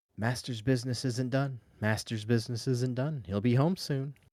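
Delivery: faint whispered woman's voice. Running a game, voicing the maid overheard through a door: faint woman's whisper. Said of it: "you can hear a faint woman's whispering".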